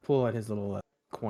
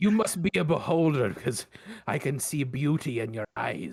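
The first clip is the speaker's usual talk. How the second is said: pitched-up, hammed-up Scottish pirate brogue; 4 semitones higher than usual. Voicing a character flirting with Bert over drinks: Scottish pirate accent. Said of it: "Scottish pirate".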